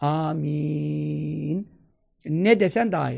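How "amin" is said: long, drawn-out final 'min'. Explaining how to say amen after a prayer: drawn-out final "min". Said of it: "Min çekilmesinde fayda var".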